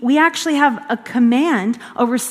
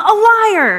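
put-on delighted, happy, high little-girl voice; 5 semitones higher, 4 dB louder than usual. Retelling a little girl answering her mom: imitating a girl lighting up happily. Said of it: "the girl lights up and she goes".

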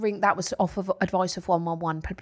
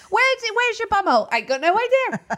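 high, loud mock Welsh accent. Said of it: "Don't know why I had to go Welsh then".

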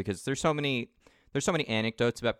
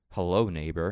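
mock sinister, low, creepy, scary delivery; 4 semitones lower than usual. Retelling a cartoon joke about a sniper greeting someone: creepy, scary way. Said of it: "in a very creepy, scary way".

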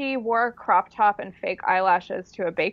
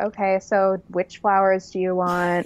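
mock deadpan delivery. Imitating Lexi as a funeral director asking about flowers: imitating Lexi, deadpan. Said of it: "so deadpan, and she'd be like".

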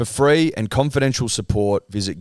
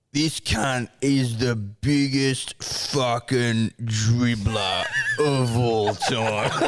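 put-on drunk man voice, much slower; 2 semitones higher, 3 dB quieter than usual. Retelling a story, the speaker quotes a man talking to his mate: imitating a drunk man. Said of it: "this other guy's had a couple".

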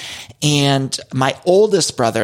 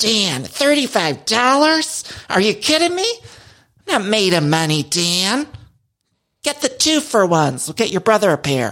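high-pitched, slow scolding tone; 7 semitones higher than usual. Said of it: "I'm just pinching the pennies".

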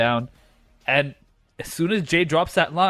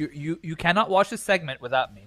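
ordinary talk

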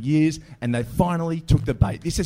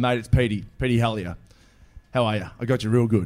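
plain

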